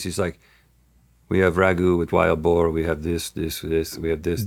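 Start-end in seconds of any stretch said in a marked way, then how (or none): 1.3-4.5 put-on deadpan, flat, much lower. Retelling what a man said once he started speaking English, imitating a deadpan delivery.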